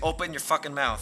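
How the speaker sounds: put-on screaming, yelled. Retelling how he went around yelling at random people, retelling a scream. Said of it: "screaming at them".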